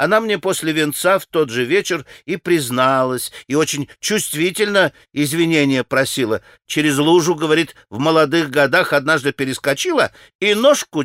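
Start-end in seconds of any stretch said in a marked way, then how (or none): none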